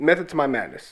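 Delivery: ordinary delivery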